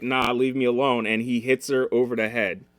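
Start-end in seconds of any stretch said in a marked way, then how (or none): 0.0-1.1 put-on groggy, drunk-sounding voice. Retelling her reply to him on the toilet, imitating a drunk, groggy voice. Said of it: "she's all drunk and groggy, like".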